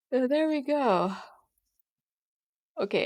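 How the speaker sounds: words stretched through yawn. Streamer wrapping up a point about a mistake, speaking through a yawn. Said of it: "I'm sorry for yawning".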